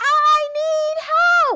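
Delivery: very high, loud, urgent shout. Showing children how to call out in an emergency: yelling for help. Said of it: "You can yell when it's an emergency".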